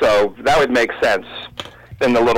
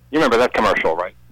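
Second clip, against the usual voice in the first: ordinary delivery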